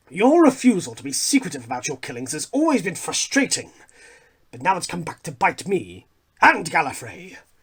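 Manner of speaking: furious, unwavering, very loud voice. The President rebukes the Lord Burner in his office; intense, furious reproach. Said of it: "as he entered the Lord President's office to the sight of an almost apoplectic Time Lord, / narrowing his eyes to tell him that this order was not negotiable. / his voice unwavering in its intensity".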